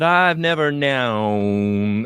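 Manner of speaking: "never known" driven home, slow and stretched. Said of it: "she'll, like, just drive that".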